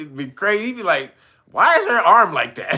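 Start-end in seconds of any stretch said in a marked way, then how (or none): 1.5-2.8 loud, blunt, blurted delivery. Retelling what a man would say at the table, imitating him saying it loud. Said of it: "He say it all loud".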